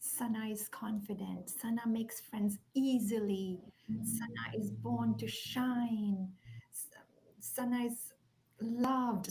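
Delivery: gentle, soft, soothing whisper. Parent showing the affirmations whispered to a daughter falling asleep, whispering. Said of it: "I'm whispering things like".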